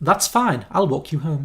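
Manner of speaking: put-on upper-class London accent. Trying a line in different accents, in a posh London Daniel Kaluuya impression. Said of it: "I'm gonna go like posh London".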